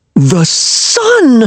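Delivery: very high, thrilled, excited cry. Reading a story aloud, a character seeing the sun: excited cry. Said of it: "cried Wilmer in excitement".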